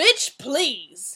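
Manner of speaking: exclaiming. Narrating a character's retort after another is praised for talent and looks, exclaimed. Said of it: "Heaven exclaimed".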